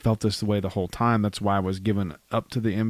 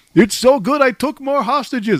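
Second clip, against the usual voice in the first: put-on very high-pitched vampire accent; 9 dB louder than usual. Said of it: "sounds like the Count from Sesame Street".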